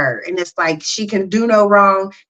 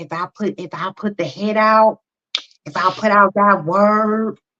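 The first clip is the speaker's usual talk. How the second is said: put-on low, hushed whisper. Retelling what a spiritual girl said, imitating her low whisper. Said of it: "She was like whispering".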